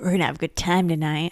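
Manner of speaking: put-on devious, sinister tone. Reacting to a horror film, repeating a character's line to mimic its devious delivery. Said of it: "He said it so devious".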